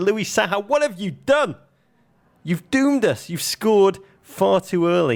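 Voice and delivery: very high yelled outcry. Retelling reacting to an early goal in a cup final: imitating own past shout. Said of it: "I shouted".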